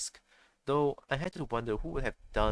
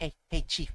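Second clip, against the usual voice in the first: put-on nasal character voice, higher pitch; 3 semitones higher than usual. Showing the voice given to Sebastian: nasal voice for Sebastian. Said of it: "I give Sebastian the nose voice".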